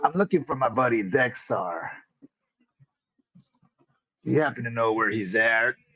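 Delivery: talking like a pirate. Speaker asks where a buddy is, in a pirate accent. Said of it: "I'm still playing with the the pirate accent".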